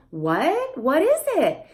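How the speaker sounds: big, exaggerated rising intonation on the word what. Showing a parent how to read a picture book: exaggerated questioning intonation. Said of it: "that intonation changes with the questions".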